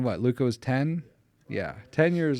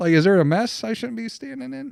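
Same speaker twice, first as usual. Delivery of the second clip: put-on high, loud, baffled, childlike confusion. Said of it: "to where you scratch your head and say".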